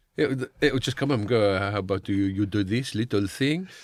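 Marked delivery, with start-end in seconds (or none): 1.6-3.7 slow, coaxing, put-on French accent. Acting out an AI with a French accent giving an order: put-on French accent. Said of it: "don't give the A I a French accent".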